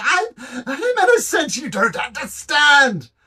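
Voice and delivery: screaming ghost voice. Voicing a ghost who lets go of a grip: ghost screaming. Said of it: "she just screams".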